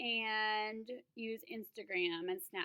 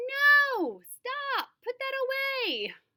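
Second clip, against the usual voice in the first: slow, very high-pitched, very loud, drawn-out yell; 13 dB louder than usual. A teacher demonstrates reacting to a student using a phone in class: loud shout. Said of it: "in a loud voice".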